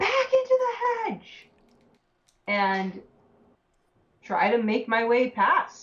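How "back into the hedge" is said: very high, loud screamed yell. Playing a character in a fight, warning the group: screaming to everybody. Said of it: "I'm going to scream to everybody".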